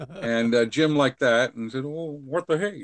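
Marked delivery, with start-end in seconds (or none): 1.8-2.8 pitched-up, high frog puppet voice. Jim answers the Kermit popping around the suitcase saying hi to Daddy, in his own Kermit voice. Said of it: "in his own Kermit voice".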